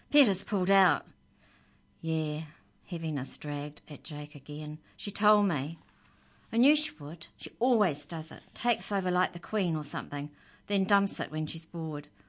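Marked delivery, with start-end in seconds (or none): 0.2-1.1 tense, tight, furious, raised voice. Narrator reading a character's reply on the phone, tight, furious voice. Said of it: "Amy's voice was tight and furious".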